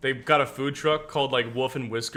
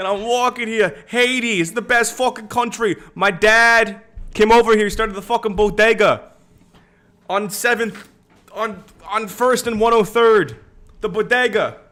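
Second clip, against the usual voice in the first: put-on New York accent, very loud and high; 9 semitones higher, 9 dB louder than usual. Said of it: "I'm doing a New York".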